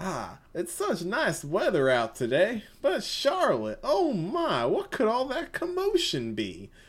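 put-on, sing-song, high-pitched Southern character voice. Voicing the pointed-head guard character, speaking to charlotte, southern accent. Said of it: "I had a southern voice for him".

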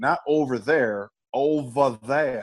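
put-on West Virginia accent, drawled. Recalling a phrase George Henshaw would say: imitating George Henshaw's West Virginian accent. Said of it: "George had this West Virginian accent".

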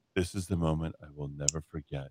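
mocking put-on voice, dropped low and soft.

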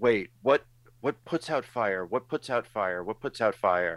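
frantic, scrambling, panicky, rattled-off speech. Retelling a contestant's state of mind: imitating panicked thinking. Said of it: "that moment in panic".

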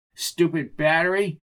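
ordinary delivery

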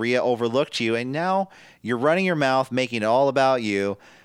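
ordinary talk, nothing marked

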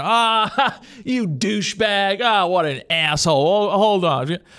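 slow, drawled dude-bro voice. Describing how guys talk with their friends, the speaker imitates them. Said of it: "Guys, you know, with their friends talking".

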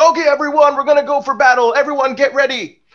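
very high-pitched, rallying call-out. Speaker acts out a man calling everyone to battle, retelling a call to a crowd. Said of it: "Saul calls out to everyone".

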